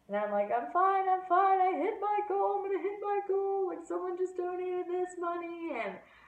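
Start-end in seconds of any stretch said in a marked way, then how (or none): 0.5-5.7 very high, acted-out crying through tears. Retelling a phone call to mom after hitting the goal: retelling own sobbing words. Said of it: "I completely lost my shit".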